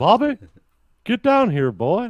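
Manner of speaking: high-pitched cartoon dad call. Doing voices from King of the Hill for the others: Hank Hill voice. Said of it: "King of the Hill".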